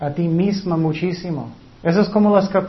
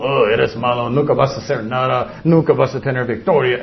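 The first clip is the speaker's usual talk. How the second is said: cold, unloving, condemning voice, lower pitch; 7 semitones lower than usual. Acting out what the devil's voice says: devil's voice. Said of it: "Esa es la voz del diablo".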